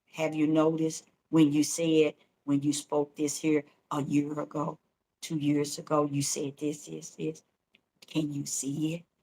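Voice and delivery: very quiet, soft, low, gentle murmur. Speaker retells what he says coming up behind them: real quiet, soft voice. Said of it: "He'll say in a real quiet and soft voice".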